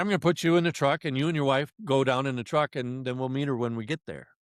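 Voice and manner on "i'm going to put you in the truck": usual speaking voice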